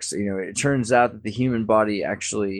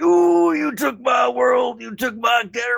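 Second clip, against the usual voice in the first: very high, drawn-out ooh, like a wrestling promo; 3 dB louder than usual. Joking that the discussion felt like wrestling: Randy Savage voice. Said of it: "like Randy Savage".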